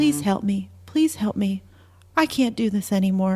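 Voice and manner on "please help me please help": usual speaking voice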